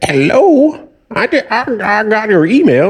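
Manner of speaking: put-on very slow, halting, high-pitched elderly voice. Retelling a customer calling about a surprise renewal charge, in an old person impression. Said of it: "this is my old person impression".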